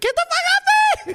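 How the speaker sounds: shrill, rushed, very high-pitched squeal. Describing how he squirms when she does it, retelling own high-pitched shout. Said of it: "I get this high pitch".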